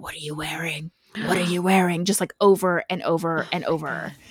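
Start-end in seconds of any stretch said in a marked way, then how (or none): 0.0-2.1 eerie, super creepy voice. Speaker retelling a story's anonymous phone caller, super creepy voice. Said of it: "in a super creepy voice".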